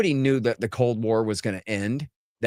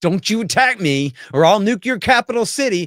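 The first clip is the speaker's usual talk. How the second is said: mock sudden full-on yell, loud and high; 9 semitones higher, 5 dB louder than usual. Acting out one side of a deal turning into a threat, acting out a yell. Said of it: "Why are you yelling?".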